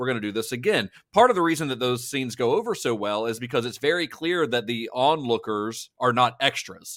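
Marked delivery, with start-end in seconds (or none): none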